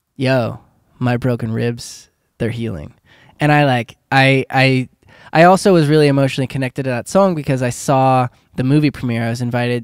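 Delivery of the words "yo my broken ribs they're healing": ordinary delivery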